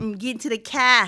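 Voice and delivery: put-on Michigan accent. Imitating how people in Michigan talk: mock Michigan accent. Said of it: "is that how Michigan people talk?".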